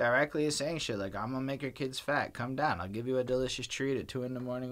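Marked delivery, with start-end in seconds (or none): none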